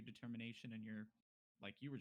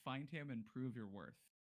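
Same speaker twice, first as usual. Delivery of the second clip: ordinary delivery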